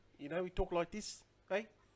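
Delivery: bad fake South African accent. After mentioning someone from south africa, the speaker tries a really bad south african accent. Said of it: "that's my really bad South African voice".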